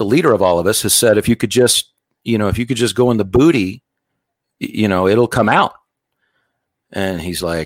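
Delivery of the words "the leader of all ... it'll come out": ordinary talk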